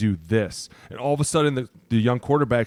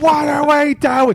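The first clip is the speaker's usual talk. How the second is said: very high, very loud, drawn-out yell; 8 dB louder than usual. Retelling how a defensive coordinator yells at the defense: imitating a coach yelling. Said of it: "physically yelling at them, like".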